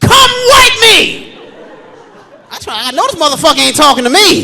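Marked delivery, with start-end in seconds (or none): 0.0-1.4 put-on very high, shrill toddler scream. Retelling a three-year-old's call from the bathroom door: imitating a screaming toddler. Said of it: "all I hear is".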